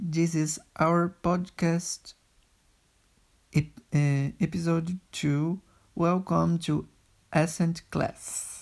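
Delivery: put-on Brazilian accent in English. A podcast host opens the episode in English, in a Brazilian accent. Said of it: "No sotaque do Brasil".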